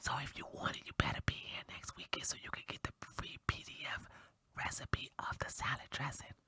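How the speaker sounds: low, hushed, secretive whispered aside. Show host speaking to viewers, whispering. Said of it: "I'm gonna whisper in your ear".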